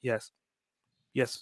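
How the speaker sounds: dull, one-note monotone voice. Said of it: "Monotone voice".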